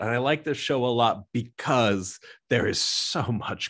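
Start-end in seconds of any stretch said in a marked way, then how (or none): none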